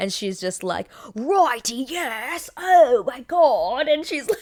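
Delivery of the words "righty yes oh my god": bad Australian accent, very drawn out, high, loud. Describing a tv episode, quoting a character at the zoo, australian accent. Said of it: "she has like this Australian accent".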